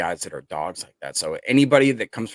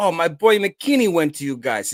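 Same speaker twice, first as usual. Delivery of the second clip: very high, loud, put-on New Jersey accent; 10 semitones higher, 5 dB louder than usual. Retelling what a young coworker from Jersey said: New Jersey accent impression. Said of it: "accent you're".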